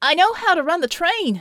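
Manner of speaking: very loud, high-pitched yelling. Narrator reads a character's line over the noise of combat, shouting. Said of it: "he shouted over the shouts".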